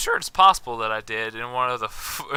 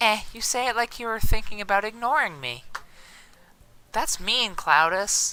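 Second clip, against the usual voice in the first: fake female voice, very high pitched; 10 semitones higher than usual. Voicing a female character replying to cloudus in a scene, put-on female voice. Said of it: "let me test out my female voice".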